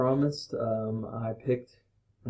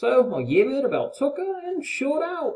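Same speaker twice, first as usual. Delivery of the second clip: put-on Australian accent, higher pitch; 13 semitones higher, 3 dB louder than usual. Reading a slang-filled story aloud in a best-attempt australian accent. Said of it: "to read in my best Australian accent".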